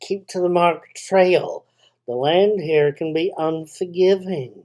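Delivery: put-on, fake accent from the American south. Quoting the hotel owner's warning to Jen, in a fake southern accent. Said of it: "he says in a fake southern accent".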